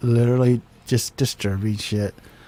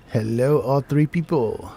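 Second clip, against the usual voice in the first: put-on spooky, creepy horror host voice. Greeting everybody at the start of the show: put-on creepy voice. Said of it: "I don't like that voice".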